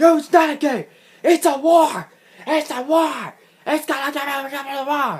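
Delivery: put-on cranky grandpa rant, very high and loud. Retelling the coach insisting it is a war: imitating Bob Backlund as an angry grandpa. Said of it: "Started sounding like damn angry grandpa".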